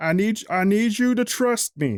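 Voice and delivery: stern. Voicing a crystal's silver mouth pleading to be left alone: stern. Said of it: "this is the first time you've heard [name] be stern".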